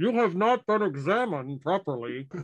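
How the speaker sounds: muffled, stifled voice. Narrating a tabletop game, a voice from the dirt mound, muffled voice. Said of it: "you hear a muffled".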